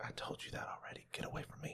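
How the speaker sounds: hushed whisper, under the breath. Retelling brushing off third-year students asking for help in the office, whispering.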